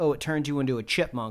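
ordinary delivery

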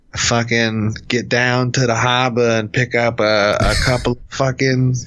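put-on Boston accent. Asked to give a Boston accent, the speaker performs a Boston accent. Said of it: "Give me your Boston accent".

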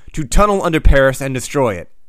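ordinary delivery

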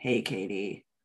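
very low, deep, gravelly man's murmur. Retelling a voice heard in the driveway: imitating a low gravelly voice. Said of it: "Just like that".

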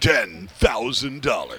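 big, swooping TV commercial announcer voice. Imitating the announcer at the shoot-off: Maverick commercial announcer voice. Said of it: "have you heard the announcer say that?".

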